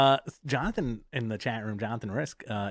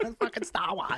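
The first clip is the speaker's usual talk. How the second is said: put-on Boston accent, pitched higher; 8 semitones higher than usual. Doing a JFK impression that drifts into Bill Burr. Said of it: "my J F K kinda goes into Bill Burr".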